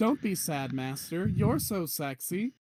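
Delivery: very slow, doting, adoring coo. Voicing a sculpture servant touching the master's cheek: adoring servant voice. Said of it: "one of them reaches out to you and touches your cheek and says".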